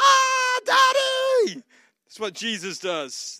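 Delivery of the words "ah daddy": put-on very high, very loud toddler voice cry. Acting out a two-year-old coming into the room at six in the morning: imitating a two-year-old calling out. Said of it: "like a two-year-old coming into your room".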